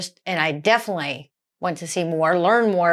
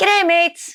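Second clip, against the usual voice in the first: put-on Australian accent, higher and louder; 11 semitones higher, 4 dB louder than usual. Greeting viewers while trying to become australian: attempted australian greeting. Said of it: "I'm trying to become Australian".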